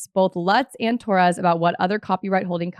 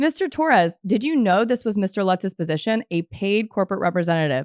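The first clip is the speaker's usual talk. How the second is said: plain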